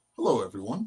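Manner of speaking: put-on grown-up man voice. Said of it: "a grown man coming out of that little body".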